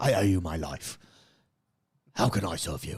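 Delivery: low put-on British accent. Predicting what happens next, voicing the rescued girl's father in a British accent. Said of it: "And it'll be a British accent".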